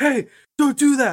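very high, shrill, drawn-out yell. Retelling yelling at a neighbor kid who punched the snowman: retelling own yelling. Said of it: "So I yelled at that kid".

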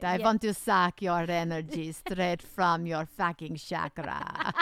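put-on horror-film vampire character voice. Talking about energy vampires, showing how it makes you talk: vampire voice. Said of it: "Doesn't it make you want to talk like this".

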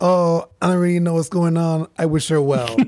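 breezy, nonchalant tone. Retelling how Trump answered a question about Ghislaine Maxwell, imitating Trump, nonchalant. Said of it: "he very nonchalantly goes".

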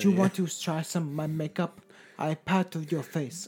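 poor put-on Japanese woman accent. Imitating a woman offering makeup to a stranger, bad Japanese woman accent.

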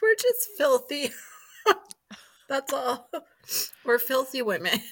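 crying with laughter. Laughing uncontrollably with a co-host during banter: crying with laughter. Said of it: "You're crying again".

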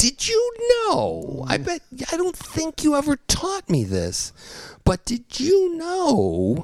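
spoken in a very high-pitched voice. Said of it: "No, not that high voice".

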